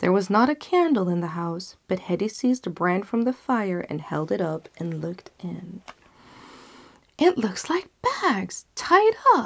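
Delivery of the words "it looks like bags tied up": high-pitched crying out. A woman holding a burning brand looks into a hole in the wall, crying out. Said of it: "she cried".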